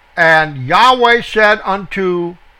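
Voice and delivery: ordinary talk, nothing marked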